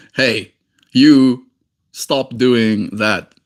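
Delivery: grave, dead serious, very slow delivery. Showing how it sounds when truly serious: really serious. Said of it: "really serious and go".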